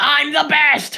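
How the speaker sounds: screaming in a boastful tone.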